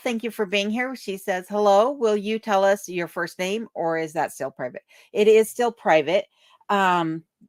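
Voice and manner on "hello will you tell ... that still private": ordinary delivery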